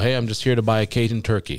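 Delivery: ordinary delivery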